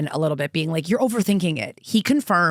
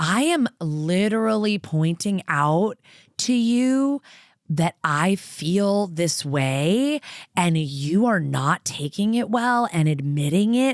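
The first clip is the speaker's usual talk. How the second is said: mock patronizing, condescending tone. Retelling what a man kept saying to a woman: imitating a condescending tone. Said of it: "He was being so condescending".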